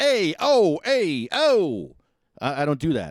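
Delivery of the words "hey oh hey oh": put-on very high, very slow, loud, drawn-out New Jersey accent. Joking in a phone message about how New Jerseyans talk: imitating New Jersey accent. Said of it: "people are from New Jersey, it's like".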